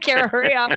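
fed-up, upset, itchy, impatient urging. Imitating Gerard, who is getting upset: imitating upset Gerard. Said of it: "Gerard is getting upset".

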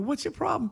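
exasperated, high, incredulous voice.

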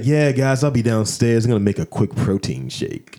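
mock creepy delivery. Retelling what a host said before going downstairs: imitating a creepy voice. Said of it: "He said it so creepy".

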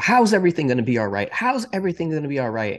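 high, swooping, loud shouted yell. Retelling a late-night parking lot talk with mom: imitating mom yelling. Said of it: "She started yelling at me".

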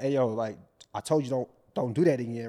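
mock disrespectful, aggressive, loud and confrontational retort. Acting out a hypothetical reply to a partner: imitating a disrespectful retort. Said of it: "now I'm talking like that".

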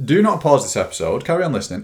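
loud, high shout with swoops. Addressing the listeners of your episode after being told off for it, shouting at the listeners. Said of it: "I'm shouting at you".

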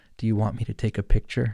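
imitated whisper. Retelling what the wife whispered in the speaker's ear: imitating wife's whisper. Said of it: "she whispers in my ear".

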